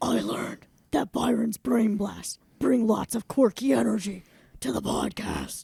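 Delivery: creaky put-on man voice. Wrapping up the podcast, say what you learned today in your best man voice. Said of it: "in your best um, man voice".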